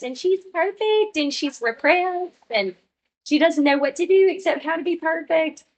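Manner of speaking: put-on very high, perfect Southern girl voice. Introducing the perfect Southern girl character: Mary Macy Buffont voice. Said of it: "And she talks like this".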